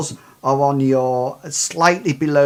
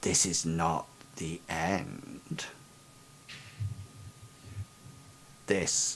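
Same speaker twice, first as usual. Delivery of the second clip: barely audible, hushed monster whisper; 10 semitones lower, 17 dB quieter than usual. A game narrator voices a monster leaning close to a player, monster whispering. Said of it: "it appears to almost like whisper to you and just says".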